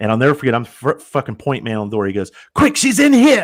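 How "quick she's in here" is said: put-on loud, high-pitched South African accent. Retelling what a naked man at the door shouted: imitating a south african accent. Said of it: "he has this, like, South African accent".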